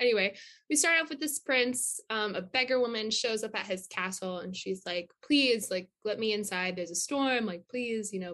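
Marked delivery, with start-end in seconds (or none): 5.2-8.1 imploring, pleading, begging tone. Retelling a beggar woman asking to be let in: imitating someone begging for mercy. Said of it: "kind of begging for mercy".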